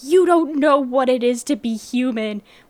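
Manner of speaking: emotional yelling. Retelling a game character's outburst in an office: imitating someone yelling. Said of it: "she's just yelling".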